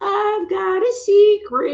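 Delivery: very high, slow, eerie, creepy doll voice. Retelling to a woman what the doll said to her: creepy doll voice. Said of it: "speaking to me in like creepy voice".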